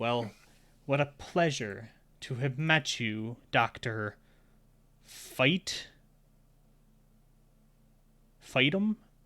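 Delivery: extremely mad and frustrated. Voicing a character who stares daggers at someone: extremely mad and frustrated. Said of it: "the audience sees him get extremely mad, extremely frustrated".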